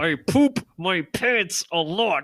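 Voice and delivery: strained, forced out through clenched teeth. Acting out what someone would be forced to admit, mock through gritted teeth. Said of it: "Clark through gritted teeth just being like".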